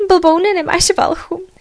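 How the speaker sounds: high, cackling, jeering through laughter. The cat, dumped into a wooden tub by the dog, speaks to him, cackling. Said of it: "chechtala se kočička".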